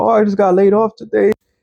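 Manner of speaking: acted, high, tearful sobbing crying voice. Imitating women on TikTok who lost their jobs: imitating someone crying. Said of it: "Women are crying about".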